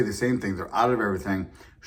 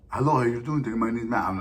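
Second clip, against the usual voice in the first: imitated Indian accent; 3 semitones higher than usual. Speaker imitating a customer service agent in the States, imitating an Indian accent. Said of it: "you get like an Indian guy".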